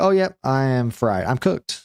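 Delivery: ordinary talk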